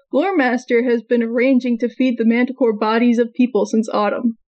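ordinary talk, nothing marked

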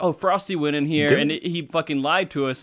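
usual speaking voice

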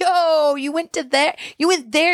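play-acted, high-pitched, laughing through the words. Retelling an Uber driver's reaction to where they went, imitating someone cracking up. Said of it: "he starts cracking up".

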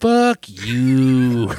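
long, loud, stretched-out delivery with "you" drawn out. Retelling a favourite movie moment, with a big, long, drawn-out delivery. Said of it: "a big, long, drawn out".

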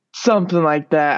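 ordinary talk

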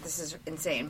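mock breathy, hushed, whispered freak-out outburst. Retelling watching the movie and flipping out: imitating own past freak-out. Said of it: "flipping out when I watched this".

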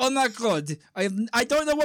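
put-on Russian-accented exclamation. Retelling an anecdote, quoting what a man said, imitating a russian guy. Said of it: "this Russian guy goes".

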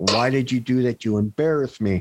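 ordinary talk

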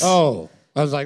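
normal talking voice

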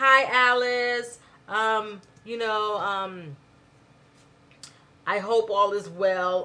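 stiff, mechanical, slow robot voice. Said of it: "They're talking like a robot".

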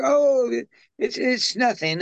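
put-on English accent, high-pitched and slow. Imitating how an actor brushed off something atrocious: imitating an english accent. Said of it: "the way he said it with the English accent".

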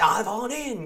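put-on Australian accent with spokesperson-style pitch. Quoting Roger from American Dad as a spokesperson: Roger's Australian accent. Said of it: "he has an Australian accent. He's like".

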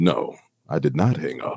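hushed, eerie, creepy voice. Retelling a phone call where a voice came on the line: imitating a creepy phone voice. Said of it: "you hear this creepy voice come over the phone".

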